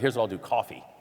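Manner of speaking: usual speaking voice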